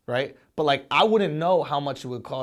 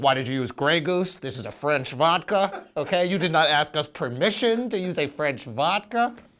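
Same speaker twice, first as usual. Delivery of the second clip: mocking, scoffing culture-vulture voice; 4 semitones higher than usual. Joking with another speaker, imitating culture vultures. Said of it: "culture vultures like".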